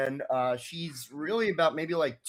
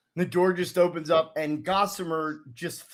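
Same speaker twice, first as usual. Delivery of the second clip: plain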